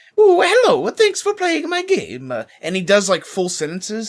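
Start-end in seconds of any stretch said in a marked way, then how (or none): 0.2-2.3 very high-pitched cartoonish voice. Describing the voice actor doing the Mario voice in full sentences: Mario voice. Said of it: "do the Mario voice for real".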